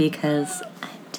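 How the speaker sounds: soft, low ghostly whisper, like a ghost.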